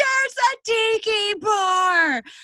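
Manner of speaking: play-acted shrill loud scream, "bar" drawn out. Speaker recounting running down a street while a woman chases him, retelling a scream. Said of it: "And I just scream".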